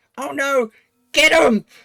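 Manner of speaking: very high, very loud, shrill, horrible creature screech. Narrator voicing a blue creature that spots the listener: shrill, horrible creature shout. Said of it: "in its shrill, slightly horrible voice, it shouts".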